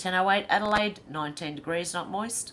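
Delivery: ordinary talk, nothing marked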